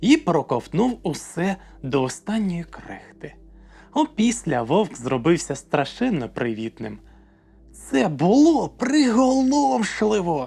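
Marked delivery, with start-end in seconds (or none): 7.7-10.5 thrilled, delighted, high-pitched exclamation. Narrator reading a character's line in a story, as a delighted exclamation. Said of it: "захоплено вигукнула Луна".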